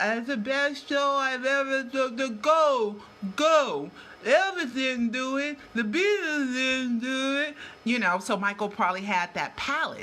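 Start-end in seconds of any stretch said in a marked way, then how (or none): 0.0-7.6 slow, slurred speech, words smeared together. Act out what was said on a recording someone made, imitating slurred speech. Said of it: "he recorded a slurred".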